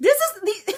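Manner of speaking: high voice breaking into laughter through words. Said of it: "I'm just laughing because".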